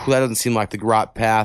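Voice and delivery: plain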